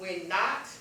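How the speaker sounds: stress on NOT.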